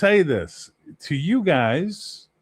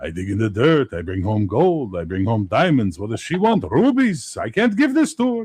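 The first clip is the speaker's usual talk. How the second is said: mock Yiddish-accented voice; 3 semitones lower than usual. Describing his fantasy setting, the speaker voices a hill dwarf in a yiddish accent. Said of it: "the hill dwarves are Yiddish".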